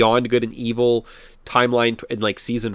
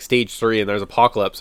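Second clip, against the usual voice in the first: ordinary delivery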